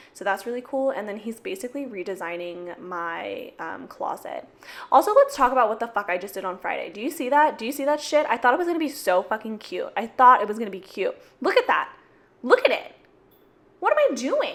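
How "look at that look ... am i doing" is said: passionate yelling, higher and louder. Showing viewers something done on Friday, screaming passionately. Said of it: "it's saying that I'm screaming".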